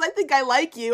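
put-on giggly voice, words broken by laughter. Retelling what someone said while she kept laughing: imitating someone laughing while talking. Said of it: "laughing and goes".

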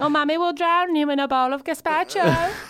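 very high, shrill, loud put-on voice. Retelling what their mum used to say, the speaker uses a put-on mum voice. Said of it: "she didn't say it in that voice".

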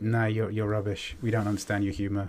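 ordinary talk, nothing marked

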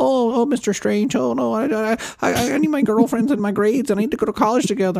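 mock nasal fast-talking nerd. Complaining about an actor's Spider-Man lines: nerdy nasal fast-talking Tom Holland impression. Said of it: "that little nerdy, nasally, super fast talking thing".

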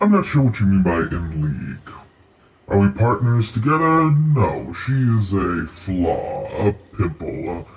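scornful, disdainful, otherworldly creature voice. The star spawn, born of the Great Old One, answers a question about Gazagoth: star spawn voice. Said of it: "I was born of the Great Old One. I am what your people would call a star spawn".

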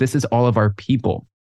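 ordinary talk, nothing marked

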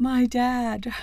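high, fake crying voice, sobbing, tearful. Speaker retells how he pretended to cry on the phone, imitating fake crying. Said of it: "acts like he's crying".

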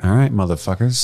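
ordinary talk

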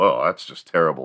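ordinary talk, nothing marked

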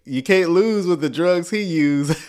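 ordinary talk

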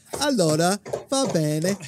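put-on babyish high-pitched voice. Voicing what the baby seems to say back: voicing baby Rosie. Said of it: "and she's going like this".

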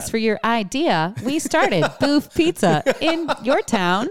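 high text-to-speech voice. Repeating the line just said, in TikTok narrator lady voice. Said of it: "I like the little inflection did on your town".

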